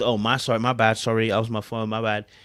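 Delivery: mock dismissively calm tone. Imitating a man brushing off his partner about his phone: imitating a dismissively calm apology. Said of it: "now suddenly he's become all calm".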